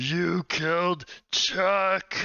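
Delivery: huge, booming, high screaming monster voice. Narrating the game, voicing the growing entity as the fish turns, big booming scream. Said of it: "starts screaming in a big booming voice".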